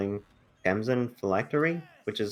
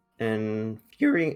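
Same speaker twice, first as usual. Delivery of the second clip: cracked, breaking voice cracking on the word. Caster commentating a card game match, voice cracking. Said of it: "my voice cracked".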